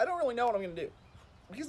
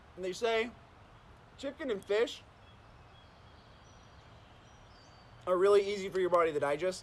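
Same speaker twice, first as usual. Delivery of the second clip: talking while chewing, mouth full; 3 semitones lower than usual. A streamer eating alone on stream keeps talking, talking while chewing. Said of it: "I'm talking while I'm chewing".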